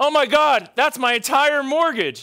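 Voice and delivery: shrill shriek, very high and very loud. Retelling a woman behind the speaker reacting to a big blackjack loss, imitating a woman's shriek. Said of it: "This woman behind me shrieks".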